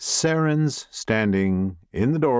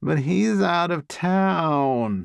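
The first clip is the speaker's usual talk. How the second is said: put-on high, whiny, stretched-out little-kid complaining tone; 8 semitones higher than usual. Narrating the story, the reader voices the sister's reply with a little-sister whine. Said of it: "Her voice takes on the little sister whine".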